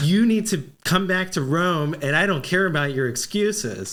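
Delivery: ordinary delivery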